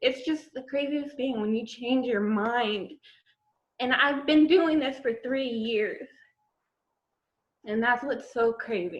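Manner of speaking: crying through words, tearful, voice breaking. Telling y'all about a three-year journey, crying while speaking. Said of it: "I'm sorry for crying".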